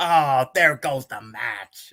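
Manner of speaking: slow, drawn-out, dejected commentary groan. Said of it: "That's how you did it on commentary".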